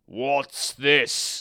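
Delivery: loud, snarling voice like a woken lion. Reading the fable, the lion woken by the mouse speaks: snarling lion. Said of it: "he snarled".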